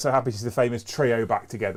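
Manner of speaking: ordinary delivery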